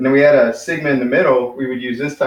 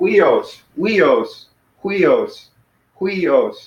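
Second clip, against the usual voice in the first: huios rising, final syllable os stressed; 4 semitones higher than usual. Teaching a word's accent, demonstrating stress on the last syllable of huios. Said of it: "we emphasize that last syllable".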